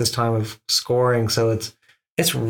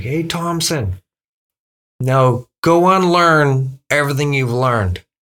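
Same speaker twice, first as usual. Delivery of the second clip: acted-out, loud shouted yell; 3 semitones higher, 5 dB louder than usual. Retelling what a teacher yelled as the speaker walked out the door, retelling a teacher's yell. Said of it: "He yells at me".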